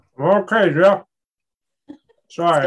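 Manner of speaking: loud talking through a mouthful of food. [name] answers his brother Jeff's welcome while eating, talking with mouth full. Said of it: "I got a mouthful".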